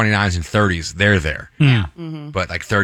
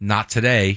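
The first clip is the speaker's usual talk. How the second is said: mock sassy tone with plenty of attitude. Retelling what they say after trying on shorts they like, sassily retelling own remark. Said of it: "You say it sassy like that?".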